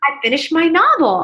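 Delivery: excited, exuberant voice. Retelling telling an acquaintance in an elevator about the novel: retelling own excited exuberant words. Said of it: "just feeling, like, excited".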